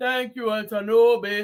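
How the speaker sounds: low, full-chested put-on Nigerian accent. Leading a group in a thank-you, demonstrating the line in a Nigerian accent. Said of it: "Put on your Nigerian voice".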